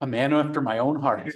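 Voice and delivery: ordinary talk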